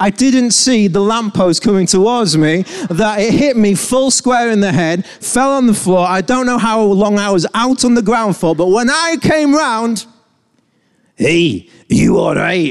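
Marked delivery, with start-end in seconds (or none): 11.2-12.7 clumsy, bad Scottish accent, cross and angry. Retelling being asked if all right after being knocked out: bad scottish accent. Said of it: "I can't do the accent".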